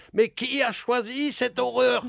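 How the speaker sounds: put-on very high, slow German-accented shout. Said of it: "Me crier du haut de, de l'escalier".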